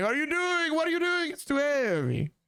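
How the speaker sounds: put-on very heavy Italian accent. Retelling how a shop owner came running out, in a strong Italian accent. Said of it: "in a very strong Italian accent saying".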